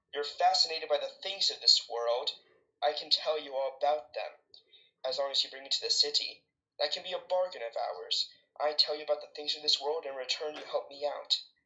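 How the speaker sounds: normal talking voice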